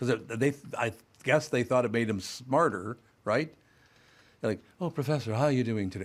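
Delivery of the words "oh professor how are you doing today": put-on slight British lilt, sounding affected and clever. Retelling classmates greeting their professor: imitating a slightly British accent. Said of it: "they all acquired this slightly British accent".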